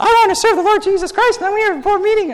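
loud, very high, squeaky tiny-creature voice. Imitating an idealistic nineteen-year-old showing up at a church board meeting, munchkin voice. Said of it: "I don't know why I have a munchkin voice".

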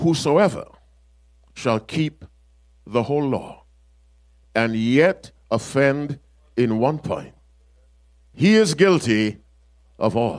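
said slowly with long pauses between phrases.

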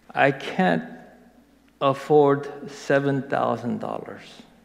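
ordinary delivery

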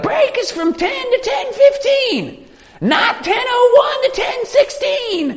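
imitated shouting in crazy voice. Speaker imitates the boss announcing break times, imitating boss's crazy shout. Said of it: "He'd be shouting with this kind of, you know, crazy voice".

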